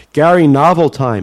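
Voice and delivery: ordinary talk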